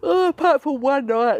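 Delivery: stretched through a yawn. Speaker telling viewers about being awake since three every night, yawning. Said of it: "now I'm yawning".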